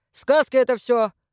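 grumbling. A man answers a woman's timid objection, grumbling. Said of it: "буркнул Лопушкин".

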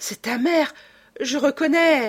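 moaned. A woman hears a great cry outside and recognizes it, moaning. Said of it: "Raymonde gémit".

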